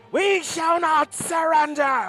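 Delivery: shouting out loudly. Voicing a creature that shouts to its brothers and sisters: shouting out. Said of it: "rather it's shouting out".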